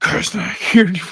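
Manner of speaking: put-on creepy voice. Retelling answering his parents after scaring his brother, scary voice. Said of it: "Kai did a scary voice".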